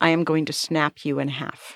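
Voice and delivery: put-on quiet threatening tone. Retelling the reply to a man who grabbed them: imitating a quiet threat. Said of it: "in a voice that he could hear and nobody else could".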